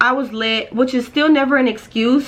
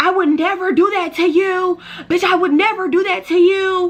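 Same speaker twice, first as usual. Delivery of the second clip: mock-drunk, shrill, turned-up yelling; 7 semitones higher than usual. Retelling how she screamed at a friend in the Uber, retelling drunken screaming. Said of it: "screaming at my friend like".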